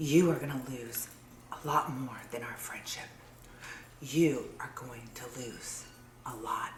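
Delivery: very quiet, low, hushed threatening tone. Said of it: "Threatening my family for what?".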